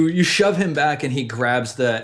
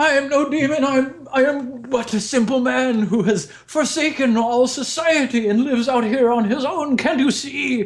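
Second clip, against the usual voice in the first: very high, cringing, cowering begging tone; 11 semitones higher than usual. Game master voicing a man who drops to his knees before the players; cowering. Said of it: "cowering before you".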